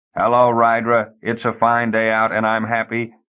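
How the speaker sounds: monotone drone. Narrator reads a trained bird's greeting to rydra, droning.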